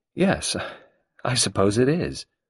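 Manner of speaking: hesitant, slow, doubtful, unconvinced. Carol replies to Sarah over cups and biscuits: doubtfully. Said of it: "she said doubtfully".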